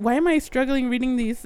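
ordinary talk

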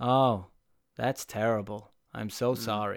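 acted flat, slow, lifeless, energy-free deadpan delivery. Mocking how a voice actor delivered a sad line: imitating a flat, lifeless line reading. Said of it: "delivered with this energy".

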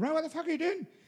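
very high-pitched put-on Irish accent. Quoting the manager who came out at them, irish accent impression. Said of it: "like my Irish accent".

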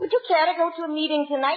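shy, hesitant tone. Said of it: "people very timidly say".

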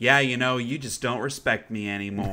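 usual speaking voice

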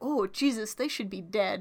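normal talking voice

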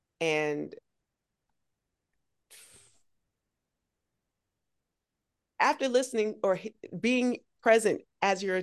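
halting, stumbling, stuttering, tripping over words. Commending someone on their story of overcoming, stuttering. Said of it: "I'm stuttering".

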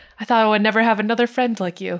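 normal talking voice

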